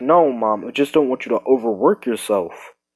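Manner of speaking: usual speaking voice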